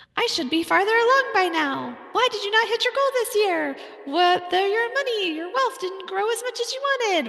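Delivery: very high, little cartoon cricket voice. Describing the inner voice business owners hear at year's end, in a Jiminy Cricket voice. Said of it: "I kind of did that in a Jiminy Cricket voice".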